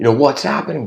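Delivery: full-on loud, high-pitched yell. Imagining bursting into a philosophy class as the teacher; shouting. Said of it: "Just shouting".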